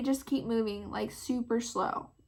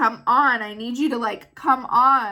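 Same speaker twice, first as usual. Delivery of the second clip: impatient, hurried tone, louder; 9 dB louder than usual. Retelling hurrying a slow daughter to the car: imitating herself hurrying someone. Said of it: "hurrying my daughter up".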